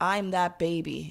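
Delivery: sobbing, tearful, breaking-down, overcome voice. Retelling a fan who breaks down crying: imitating a fan crying. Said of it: "she just breaks down crying".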